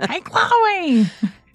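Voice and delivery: loud, high-pitched yell. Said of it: "be on the sideline yelling".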